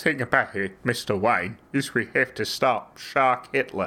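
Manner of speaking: put-on English accent gradually slipping into Australian. Joking about a Jaws sequel, doing a Michael Caine impression slipping Australian. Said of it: "Michael Caine's one of the easiest impressions".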